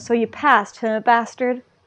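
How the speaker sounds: ordinary talk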